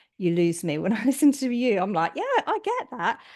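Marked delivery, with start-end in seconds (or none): 2.1-3.2 very high mock agreement.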